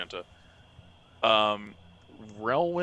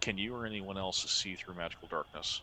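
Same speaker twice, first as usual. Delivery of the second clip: soft, hushed whisper, as quiet as possible. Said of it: "he's whispering as quietly as possible".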